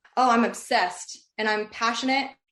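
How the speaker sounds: ordinary talk, nothing marked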